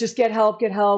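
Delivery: put-on tearful, crying, pleading tone. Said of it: "And I'm like".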